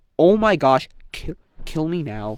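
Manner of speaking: acted, ridiculously furious, fed-up outburst. Retelling how a swimmer reacted to missing an award, imitating someone furious. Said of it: "He's like ridiculously mad".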